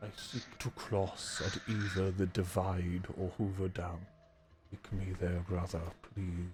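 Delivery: gentle, hulking giant character voice. Voicing a super mutant in an actual-play game: gentle giant super mutant voice.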